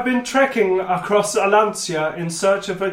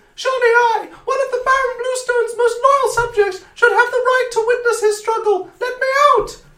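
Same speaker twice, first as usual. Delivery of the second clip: small, tiny, very high, imploring pleading voice. Reading aloud a locked-up prisoner's plea to be let out: tiny imploring voice. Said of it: "a tiny voice implores".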